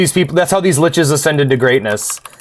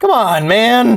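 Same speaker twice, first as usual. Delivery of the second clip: high voice, breaking and cracking mid-line; 9 semitones higher than usual. Reacting to losing a fight in the game: voice cracking. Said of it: "Voice cracking".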